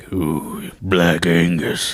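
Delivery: creepy, overly deep, raspy announcer voice. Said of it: "too deep, too raspy".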